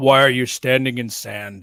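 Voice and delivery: loud, booming, big iconic movie-star voice. Joking that the Vader voice could return: James Earl Jones voice. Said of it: "you hear James Earl Jones' voice".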